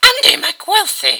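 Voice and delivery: shrill, very high, very loud yell. A girl grabs the narrator's lapels and yells in the narrator's face. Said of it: "she yelled in my face".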